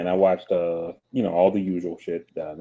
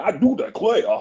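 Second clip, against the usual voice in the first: cartoonish, exaggerated Southern drawl, higher and louder; 13 semitones higher, 5 dB louder than usual. Mocking a film character's accent as cartoon-like: cartoonish Southern accent. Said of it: "it's like one of those cartoons".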